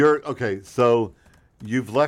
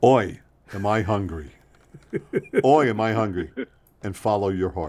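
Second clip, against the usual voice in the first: put-on slow, weary voice; 2 semitones lower than usual. Ending advice on air with a joke: hungry therapist impression. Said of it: "That's my impression of a hungry therapist".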